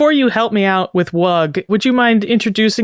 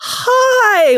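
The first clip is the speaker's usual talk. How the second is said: very high, surprised, delighted, drawn out; 13 semitones higher than usual. Greeting someone who ducked into a doorway, mock excited surprise. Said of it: "with the tone of like, "Oh my gosh, I haven't seen you in years."".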